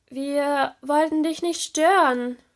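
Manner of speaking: stammering. Reading a story: a character swims backward from a lantern fish, stammering. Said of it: "stotterte Serena und schwamm eilig rückwärts".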